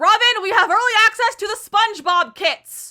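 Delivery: very high-pitched, thrilled, excited shouting. Finding early access to new game kits, the speaker calls to someone: excited shouting. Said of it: "Sorry I'm shouting".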